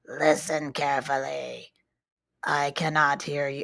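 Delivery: very low, flat, mechanical robotic monotone. Reading a spooky story aloud, a voice on the phone: mechanical voice. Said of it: "a mechanical voice said".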